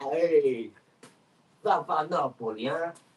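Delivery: put-on slow, drawling old-man New York mobster accent. Mimic a man you find entertaining, who is like a mafia geezer, in a New York upstate accent. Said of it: "he's got the New York upstate accent".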